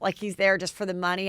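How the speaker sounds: ordinary talk, nothing marked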